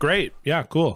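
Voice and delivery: sarcastic, ironic tone. Responding to complaints about a band that got famous, in a sarcastic tone. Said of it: "I'm being sarcastic".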